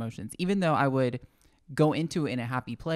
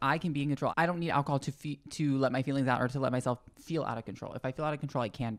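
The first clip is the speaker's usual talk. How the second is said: plain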